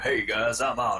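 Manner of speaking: put-on acted middle-aged male voice. Joking that the original voice actor has grown up, grown-up Arnold voice.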